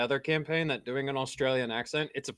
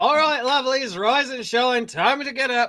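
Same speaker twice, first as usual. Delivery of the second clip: very loud, very high-pitched bellowing; 10 semitones higher, 5 dB louder than usual. Waking everyone the next morning as your character: loud wake-up call. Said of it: "Why are you so loud?".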